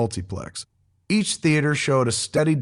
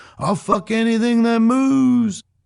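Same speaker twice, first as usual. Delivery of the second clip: clumsy put-on film-star voice, pitched way up, drawn out; 10 semitones higher, 4 dB louder than usual. Recalling the start of a film conversation, doing a bad Dennis Hopper impression. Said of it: "a bad impression of Dennis Hopper uttering his immortal line".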